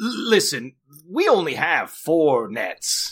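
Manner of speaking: high-pitched, slow, scolding sailor voice.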